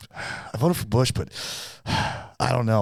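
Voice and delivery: acted reluctant, half-hearted, dissatisfied, grudging tone. Retelling a father's answer about who he voted for: imitating dad, dissatisfied. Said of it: "he wasn't gonna be satisfied no matter what".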